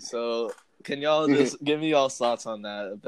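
normal talking voice

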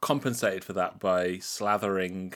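ordinary talk, nothing marked

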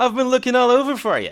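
very high-pitched, loud, fumbling nerd voice. In an improvised scene on the quad, Ralph catches up to Jake: fumbly nerd voice. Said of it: "Ralph being a kind of like fumbly nerd character".

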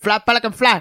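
high, over-the-top, put-on Cuban accent. Mocking a film actor's accent as no real Cuban's: Al Pacino's Cuban accent in Scarface. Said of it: "I've never heard a Cuban in my life that sounds like".

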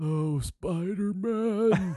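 put-on woman's voice, deep, hoarse. Imitating how an actress talks: Emma Stone impression, deep hoarse. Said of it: "Demi Moore type of deep, you know, hoarse voice".

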